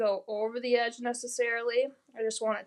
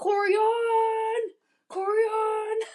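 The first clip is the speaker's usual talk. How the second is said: put-on old man voice, much higher pitched; 10 semitones higher, 4 dB louder than usual. Remember how your uncle used to call your name, as Uncle Ben calling out in a grandpa voice. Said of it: "In his best grandpa voice".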